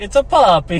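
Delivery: exaggerated, over-the-top Italian accent. Retelling a joke nobody got, over-the-top Italian accent. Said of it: "In an over the top Italian accent".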